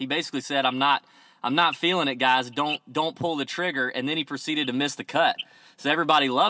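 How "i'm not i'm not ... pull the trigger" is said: ordinary talk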